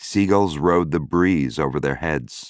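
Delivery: ordinary delivery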